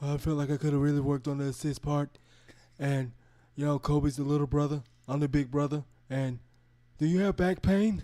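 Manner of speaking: strained, flat voice, each word pushed out. Answer a question about how your game went, in a Shaq voice, struggling to talk. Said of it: "Shaq always sounds like he's struggling to talk".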